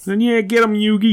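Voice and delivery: put-on very high, loud Boston accent. Chatting about Yu-Gi-Oh, quoting Yugi's friend in a Joey Wheeler Boston accent. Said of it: "who's got a Boston accent".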